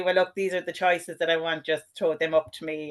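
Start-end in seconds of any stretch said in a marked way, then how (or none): none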